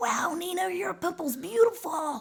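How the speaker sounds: put-on very high, weird little French cartoon kid voice. A voice actor describing cartoon kid roles they get cast for, in a weird little french kid voice. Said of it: "these weird little voices".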